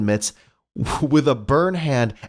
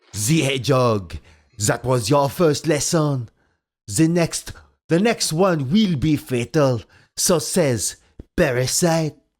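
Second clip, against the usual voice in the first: put-on French accent, laid on thick; 2 semitones higher than usual. Narrator reads the nugget Parasite's line to Sonic, Parasite's heavy French accent. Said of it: "noting the heavy French accent".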